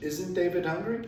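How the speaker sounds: normal talking voice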